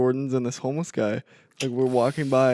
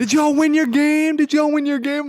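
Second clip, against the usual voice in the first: very high, loud, excited hollering; 14 semitones higher, 8 dB louder than usual. Retelling crossing the street as a woman approached, imitating someone yelling. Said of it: "she's, like, yelling".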